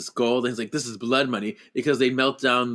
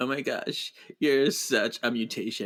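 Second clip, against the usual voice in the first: slow, play-acted flirty tone; 4 dB quieter than usual. Retelling a movie scene, imitating Charles Xavier flirting. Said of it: "flirty, flirty".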